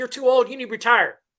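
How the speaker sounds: mock screaming, tossed off like a heckler. Imitating fans telling an aging player to retire: imitating people screaming. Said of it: "Everybody be screaming like".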